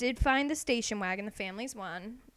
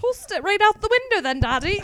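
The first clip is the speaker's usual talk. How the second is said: very loud, high, put-on English accent; 9 semitones higher, 9 dB louder than usual. Play-acting a road trip story with a wallaby and a dingo, in a put-on English accent. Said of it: "I turned English real".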